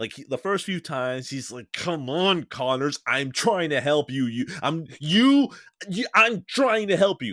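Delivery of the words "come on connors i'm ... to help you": put-on strained, patient voice, higher. Retelling the first rounds of the fight: imitating Peter Parker's strained patience. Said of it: "Peter just progressively loses his patience".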